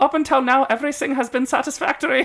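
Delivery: very high, put-on German accent. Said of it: "I'm not gonna do the accent the whole time".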